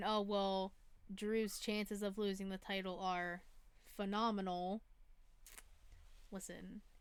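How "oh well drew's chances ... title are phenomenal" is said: usual speaking voice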